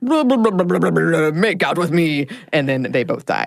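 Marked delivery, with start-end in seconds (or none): 0.0-2.3 careless, dismissive dude voice. Retelling how a horror episode starts, imitating the dude. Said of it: "That was the best impression".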